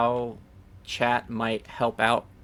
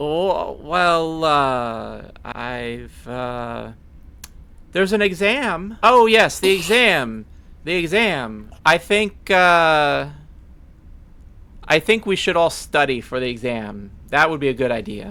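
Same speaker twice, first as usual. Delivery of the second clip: put-on slow, loud drunken rambling with long drawn-out uh; 4 semitones higher, 5 dB louder than usual. Asked for exam tips, the speaker answers as Chris: drunk Chris voice. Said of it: "being drunk makes Chris".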